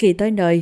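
plain reading voice

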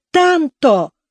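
high, sudden shout, crying out. Reading the narrator calling out to his brother mid-argument: shouting. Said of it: "крикнул я".

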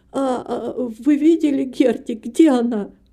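slow, quavering, wary, trembling voice. Nancy, still distrustful, asks Gertrude about Gertie; trembling voice. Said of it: "спросила дрожащим голосом".

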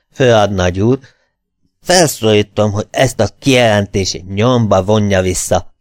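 ordinary delivery

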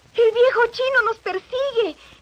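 very high, shrill shout. The girl, fleeing the old man with the chimney sweep, falls to her knees shouting. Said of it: "gritó la chica cayendo de rodillas".

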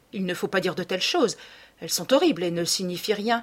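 ordinary delivery

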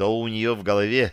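ordinary delivery, nothing marked

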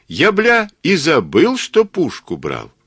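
delighted, joyful, high yell. Narrator reads Katsuba greeting Vovik, a joyful yell. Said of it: "радостно заорал Кацуба".

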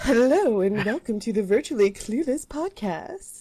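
put-on polite telephone voice. Opening the podcast intro: put-on phone voice. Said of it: "without my phone voice".

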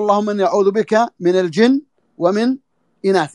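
ordinary talk, nothing marked

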